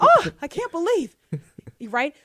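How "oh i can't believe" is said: mock very high, drawn-out scandalized gasp. Acting out churchgoers clutching their pearls: mock shocked pearl-clutching. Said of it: "Clutching their".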